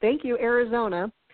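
normal talking voice

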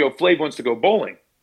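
put-on casual, nonchalant, offhand throwaway tone. Retelling how a friend casually announced a bowling invite: imitating Omar's nonchalant tone. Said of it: "he just said it like this".

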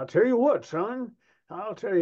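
animated, swooping, high-pitched cartoon rooster voice. Describing a cartoon rooster character to someone, imitating a cartoon rooster. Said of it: "he was a rooster. And he said".

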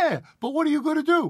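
put-on very high old woman voice speaking broken English. Retelling what the grandmother asked after graduation: imitating grandmother's broken english. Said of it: "in her broken English".

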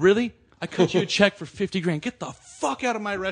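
full, loud, high-pitched screaming outburst. Retelling how a man in a documentary screamed at a visitor: retelling a scream. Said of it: "And he's screaming at".

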